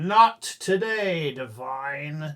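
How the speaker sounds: loud, booming, resounding voice. Voicing a halfling who calls out from the rocks behind: booming voice. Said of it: "a voice booming from the rocks".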